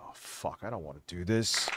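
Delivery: put-on hushed, reluctant, dreading whisper of a kid. Mocking how the other speaker reads: imitating a reluctant student. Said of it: "That's what he sounds like".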